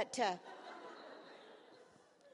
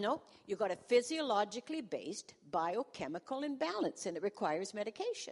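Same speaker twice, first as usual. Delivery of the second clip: usual speaking voice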